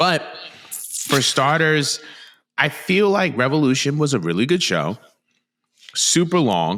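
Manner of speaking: talking with mouth full. Asked for takeaways on a wrestling show, answering; talking while chewing. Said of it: "I'm just chewing on my A O".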